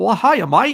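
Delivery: terrible fake Australian accent, high and loud. Replying to a hello from Melbourne, Australia: bad put-on Australian accent. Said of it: "That's my Australian. It's terrible".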